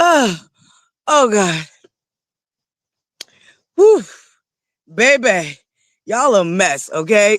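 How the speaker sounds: slow, winded, out-of-breath breath-catching voice. Recovering from a choking fit while talking to viewers: catching breath after choking. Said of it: "I'm over here trying to get my breath".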